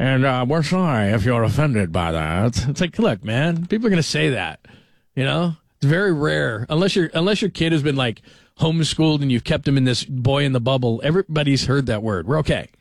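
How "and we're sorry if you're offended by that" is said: slow, measured network news anchor voice. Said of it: "that's more Tom Brokaw".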